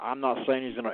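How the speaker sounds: ordinary talk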